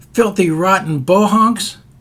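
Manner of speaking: sudden, raving, yelled outburst. Retelling a man on a subway platform shouting: imitating a man yelling.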